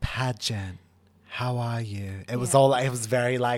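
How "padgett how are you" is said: flat, slow, drawn-out monotone. Show how she delivered her lines in her bad acting, in a monotone Kourtney Kardashian impression. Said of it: "I can't do the Kardashian voice".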